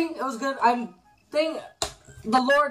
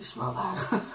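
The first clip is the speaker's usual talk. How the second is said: put-on menacing dinosaur voice, lower and quieter; 5 semitones lower, 8 dB quieter than usual. Imagining the dinosaur talking in Cameron Conroy's voice. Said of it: "like, Cameron Conroy's voice".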